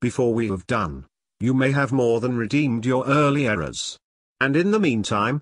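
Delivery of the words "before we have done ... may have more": ordinary delivery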